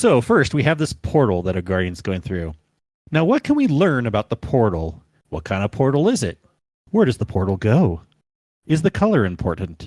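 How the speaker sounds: earnest, overly serious analytical tone, played straight. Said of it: "trying to keep a serious face".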